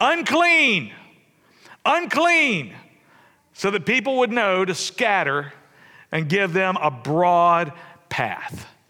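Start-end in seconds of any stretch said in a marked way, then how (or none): 0.0-2.7 high, loud yelling cry. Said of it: "They had to yell out".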